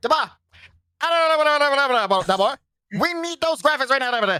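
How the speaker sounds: very high, very slow co-host voice, Dama stretched. Doing an impression of a co-host asking for graphics: imitating T-Base. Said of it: "this is T-Base".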